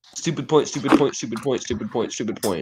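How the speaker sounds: plain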